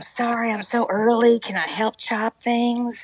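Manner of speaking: put-on high, odd old-man voice. Describing an 85-year-old who arrives very early, imitating his strange voice. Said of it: "this is how he talks".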